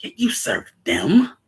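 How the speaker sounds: contemptuous scoff. Quoting a character's line from a scene: imitating a scoff. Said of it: "it's a scoff".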